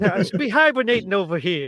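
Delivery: put-on Jersey accent, rattled off quickly. Imitating the bear from the show: Joe Pesci-like Jersey accent. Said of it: "it sounded like Joe Pesci".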